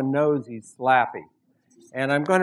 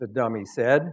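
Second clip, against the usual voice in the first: ordinary delivery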